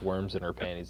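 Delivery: soft, straight-faced deadpan delivery.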